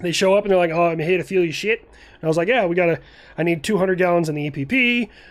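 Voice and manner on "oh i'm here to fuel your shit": terrible, badly done fake Australian accent. Retelling people showing up to refuel, in a terrible Australian accent. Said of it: "I'm gonna do a terrible Australian accent".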